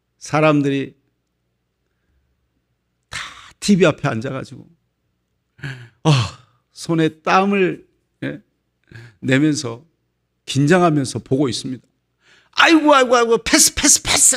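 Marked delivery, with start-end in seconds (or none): 12.5-14.4 anguished groaning voice. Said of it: "그러면서 막 안타까워가지고".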